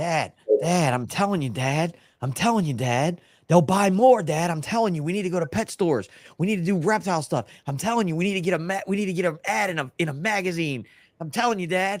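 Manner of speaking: eager, insistent, pleading, high and exuberant. Acting out the other speaker pitching ideas to dad: imitating someone exuberantly pitching ideas. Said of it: "you are exuberant when you have ideas".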